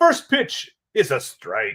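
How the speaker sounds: swooping Scottish-accented commentator voice. Calling a ballgame as a nineteen-forties announcer, slipping into a Scottish accent. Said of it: "I went like Scottish all of a sudden there".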